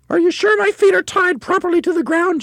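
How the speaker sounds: gasping cry, very high and loud. A narrator reads a woman character's line, gasped. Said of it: "she gasped".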